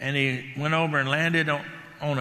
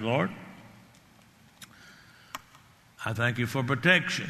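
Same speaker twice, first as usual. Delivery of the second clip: quiet, low murmur under the breath; 4 semitones lower, 4 dB quieter than usual. Retelling a quiet prayer said in a pickup: retelling a muttered prayer. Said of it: "under my breath".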